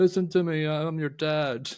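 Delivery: play-acted, high, drawn-out, all-in panicky fluster. Recounting a film scene, the speaker does the dad's line in a mock-panicky voice. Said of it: "he has his voice because he's all very panicky".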